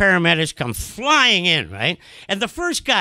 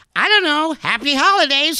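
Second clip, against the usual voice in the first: mock bright, very cheerful, chipper and pitched-up; 9 semitones higher than usual. Retelling a paramedic's answer about whether a man will survive, mock-cheerful voice. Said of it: "And in a very cheerful voice".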